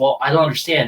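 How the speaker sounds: put-on snippy voice. Retelling a scene where Danielle is refused: imitating Danielle being snippy. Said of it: "she gets a little snippy and she says".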